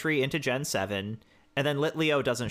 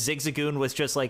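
ordinary talk, nothing marked

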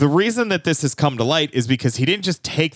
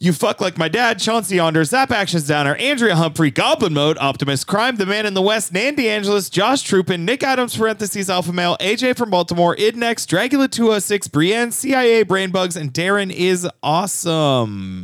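rushed out all in one breath; 4 semitones higher than usual. Reading out a long list of names to thank, all in one breath. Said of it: "I didn't know if I could do it all in one breath".

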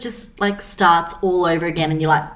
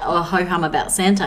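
plain

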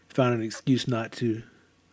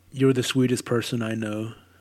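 plain

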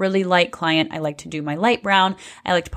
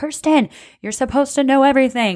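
mock high screaming yell, scolding tone. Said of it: "screaming at me like".

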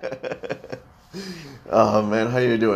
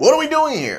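very high, loud, lively, excited exclaiming; 6 dB louder than usual. Showing how a podcast question should sound, enthusiastic question. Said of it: "you say it more enthusiastically. Because it's a question mark exclamation point".

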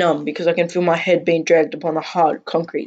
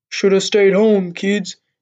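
odd, freakish, unnatural voice; 2 semitones higher than usual. A man holding a gun on two kids speaks to them, freakishly deep voice. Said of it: "he says in a freakishly deep voice".

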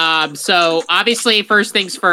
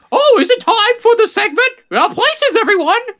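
called out, pitched way up high; 4 dB louder than usual. Imagining a Disney segment opening, Mickey Mouse voice. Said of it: "a big thing where Mickey Mouse goes".

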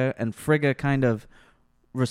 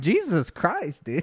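ordinary talk

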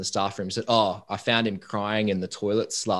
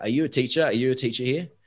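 put-on heavy Central European accent, Polish or German; 4 semitones higher than usual. Retelling a man's question to a pre-service teacher, imitating a really thick accent. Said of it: "in a really thick accent".

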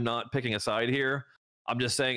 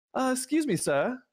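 put-on English kid accent, much higher pitch, slower; 13 semitones higher than usual. Imagining the speaker's kid picking up the phone, in an English accent. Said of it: "I don't know why he has an English accent".

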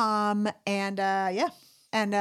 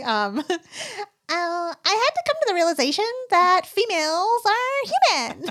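chipmunk voice, much higher and slower; 10 semitones higher, 7 dB louder than usual. Imagining the conversation translated into chipmunk voices, chipmunk voice. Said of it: "there's like a chipmunk saying".

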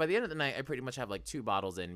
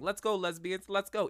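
high-pitched, rallying scream; 8 semitones higher than usual. Retelling screaming at friends in the cold: imitating own screaming. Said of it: "screaming at my friends".

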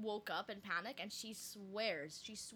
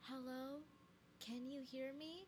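put-on small, soft, hushed, high little-girl voice; 5 semitones higher, 7 dB quieter than usual. Recounting a voice their mom heard at night, the speaker does a little girl's voice. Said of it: "it was like a little girl's voice".

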